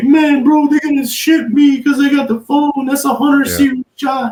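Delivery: put-on tearful crying, voice very high. Retelling how a guy started crying: imitating someone crying. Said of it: "He starts crying. He's like".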